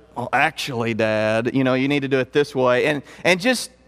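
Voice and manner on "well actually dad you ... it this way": put-on skeptical mutter under the breath, lower. Retelling how his son corrected his coaching: imitating muttering under his breath. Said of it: "kinda talking under his breath".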